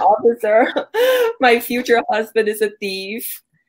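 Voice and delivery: acted, upset, slow, tearful crying plea. Retelling going to the police upset, re-enacting crying to the officer. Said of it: "I'm crying to the officer".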